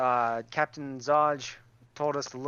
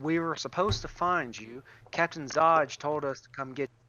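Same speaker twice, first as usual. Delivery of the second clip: put-on American Southern accent, character voice. Speaker voices a character in a role-play scene, with southern accent. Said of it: "when did you adopt an, a southern accent?".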